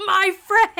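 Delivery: shrill, full-throated, very loud, high shriek. Acting out a character screaming back in the book: imitating a scream. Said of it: "Richard screams back".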